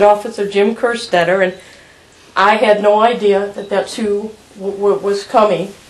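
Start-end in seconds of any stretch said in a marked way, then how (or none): none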